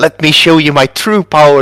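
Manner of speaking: high-pitched goblin character voice. Acting out the goblin about to attack a monster: speaking as the goblin. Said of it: "he says, channeling darkness into the sword".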